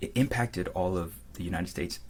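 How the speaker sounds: plain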